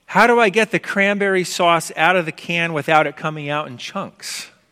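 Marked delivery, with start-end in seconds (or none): none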